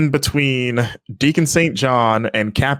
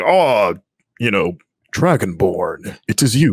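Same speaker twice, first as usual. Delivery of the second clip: powerful put-on wise-man voice, lower and slower; 5 semitones lower than usual. Describing a game character's voice to others, quoting him: powerful stereotypical wise-man voice. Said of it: "that powerful kind of stereotypical wise man voice".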